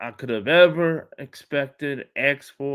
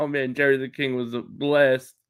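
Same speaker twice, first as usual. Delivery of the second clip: ordinary talk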